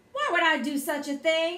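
demanding, insistent tone. The narrator answers a question put to them, demanding. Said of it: "I demanded to know".

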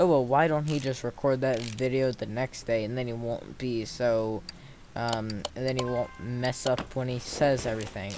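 ordinary delivery

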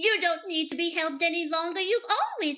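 sweet good-witch character voice. Told in college they sound like Glinda, the speaker tries her voice: Glinda the Good Witch voice. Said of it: "I tried her voice".

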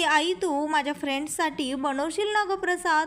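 ordinary talk, nothing marked

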